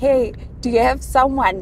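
mock playful teasing tone. Speaker retells teasing their grandma, retelling a teasing question. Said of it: "But I was teasing her".

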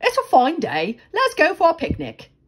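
quick, businesslike, brisk and high-pitched. Narrator reads mr. busy speaking to mr. slow, brisk. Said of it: "Busy briskly".

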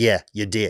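ordinary talk, nothing marked

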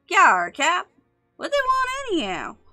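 put-on very high, young-sounding, muffled voice. Reading a sailor's reply to his captain: youthful-sounding voice. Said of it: "youthful-sounding voice replies".

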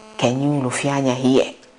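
put-on devil whisper. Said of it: "the voice of the devil that comes to whisper".

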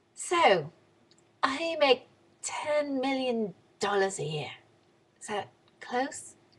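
clumsy put-on English accent. Retelling Piers Morgan questioning Paris Hilton, in a bad Piers Morgan English accent. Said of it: "bad English accent".

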